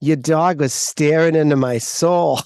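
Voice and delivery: put-on Boston-accented speech. Retelling what a woman said after the dog stared at her, best Boston accent. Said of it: "said in the best Boston accent".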